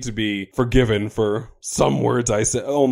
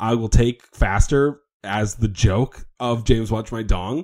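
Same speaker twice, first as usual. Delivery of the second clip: ordinary talk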